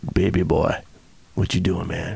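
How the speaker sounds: rough, gravelly deep voice, soft rumble. Retelling how a man greeted the speaker, in a deep gravelly voice. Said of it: "in that deep, gravelly voice".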